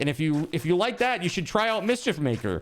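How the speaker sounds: mock jokey, high, goofy, sarcastic tone. Retelling own reply under a company's tweet: retelling a sarcastic goofy reply. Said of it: "It was supposed to be sarcastic and goofy".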